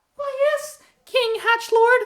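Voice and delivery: very high, fairy-like voice. In character, answering the king, in a fairy-like voice. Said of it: "you sound a lot like a fairy".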